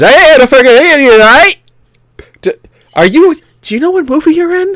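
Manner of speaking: put-on Gaelic accent. Joking about another character's accent in the film: mock gaelic accent. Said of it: "one of the other guys is gonna be speaking Gaelic".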